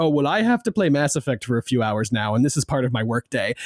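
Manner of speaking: self-mocking, lightly sneering delivery. Retelling own words about playing a game for work: imitating own mocking tone. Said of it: "I just said it in kind of a mocking tone".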